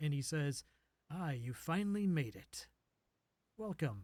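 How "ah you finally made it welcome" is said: refined, cultured way of speaking. A hooded man at the end of a walkway greets the arrivals, very cultured voice. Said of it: "speaks in kind of a very cultured sounding voice".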